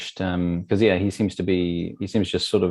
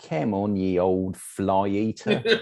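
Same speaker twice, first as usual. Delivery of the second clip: ridiculous weird put-on Cockney accent impression. Retelling how he addresses Renfield, in a ridiculous weird Cockney accent. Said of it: "ridiculous kind of weird Cockney accent".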